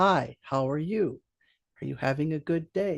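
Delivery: each word at a steady, measured, even pace. Showing how people in Peru spoke to the speaker: very even pace. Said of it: "they spoke to me at a very even pace".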